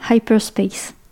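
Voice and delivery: proper, clean, native-sounding English accent. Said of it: "Super accent anglais en plus".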